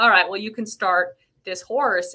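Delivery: ordinary talk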